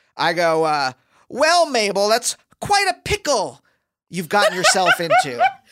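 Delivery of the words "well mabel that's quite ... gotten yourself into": mock, loudish, animated voice with rising pitch. Retelling a line said to the dog to be overheard: retelling a loudish voice. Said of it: "in a very kind of, like, loudish voice".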